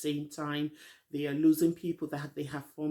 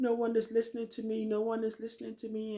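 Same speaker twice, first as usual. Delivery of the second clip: put-on tearful crying, higher; 7 semitones higher than usual. Retelling how someone stood up and started crying: imitating someone crying. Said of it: "And she starts crying".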